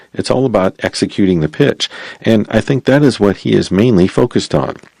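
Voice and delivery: plain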